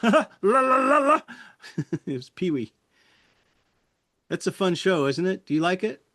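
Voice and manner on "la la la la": very high, loud, hyper, stretched-out character voice. Describing how a performer switched voices once the camera started rolling, Pee-wee voice. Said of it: "when the camera started rolling".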